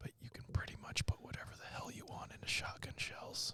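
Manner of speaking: quiet, soft speech. Admitting something about loading shotgun shells: said quietly. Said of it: "I'm gonna say it quietly".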